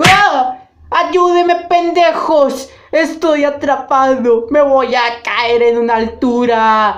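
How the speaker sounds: brash, crude, parody dub-style put-on voice.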